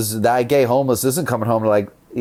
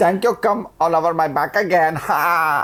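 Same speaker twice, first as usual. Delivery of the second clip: mock Indian accent, higher; 6 semitones higher than usual. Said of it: "Try say an Indian voice".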